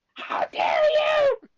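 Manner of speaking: very high, crackly little squeaking cry. Describing how the character sounds when she rarely yells: imitating Fluttershy's crackly yell. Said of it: "she still has a funny little crackly voice like".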